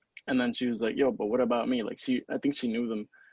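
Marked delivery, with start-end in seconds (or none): 1.0-1.8 imitated heavy Colombian accent. Retelling what a teacher said to two men: imitating a strong Colombian accent. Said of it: "a really strong accent".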